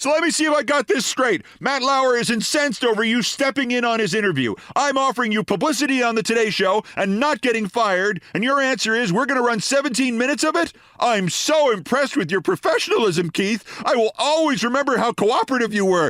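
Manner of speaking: very high, shrieking, screaming rant. Retelling Kappas's reply to the proposal, retelling Kappas screaming. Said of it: "Kappas resumed screaming".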